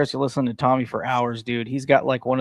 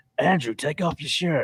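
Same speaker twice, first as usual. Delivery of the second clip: put-on smooth voice, higher; 3 semitones higher than usual. Imitating Tommy asking Andrew to take off his shirt: imitating Tommy's smooth voice. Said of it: "that's how smooth that voice is".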